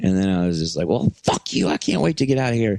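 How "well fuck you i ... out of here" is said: mock high, screaming yell. Retelling own side of a screaming argument: retelling own screaming. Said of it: "we're yelling at each other and screaming".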